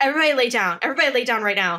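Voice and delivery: freaked-out, paranoid, frantic, urgent tone. Retelling a character's bad trip: imitating Mark freaking out. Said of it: "starts freaking out".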